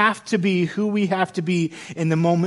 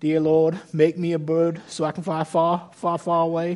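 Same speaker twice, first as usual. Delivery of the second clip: put-on slow, drawn-out Southern girl accent. Quoting Jenny's prayer from the movie Forrest Gump, in a Jenny accent. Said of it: "It's the best Jenny accent I got for you".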